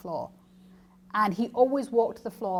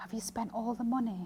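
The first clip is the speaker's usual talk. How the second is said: hushed, soft, paranoid voice; 2 semitones higher, 8 dB quieter than usual. Recounting their father in intensive care taking their hand, retelling a hushed question. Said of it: "in a hushed voice".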